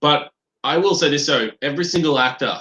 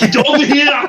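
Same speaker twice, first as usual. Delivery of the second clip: very high, loud battle-cry shout; 13 semitones higher, 7 dB louder than usual. Repeating a trailer line, imitating Arnold Schwarzenegger as Scorpion. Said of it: "sounded like Arnold Schwarzenegger as Scorpion".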